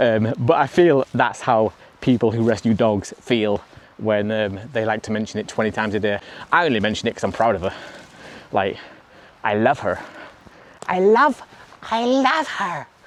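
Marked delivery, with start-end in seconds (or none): 9.4-12.8 odd, goofy put-on voice, high and drawn out. Speaker talking about her rescue dog, saying she loves her: put-on voice. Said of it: "Why did I have to do it in that voice?".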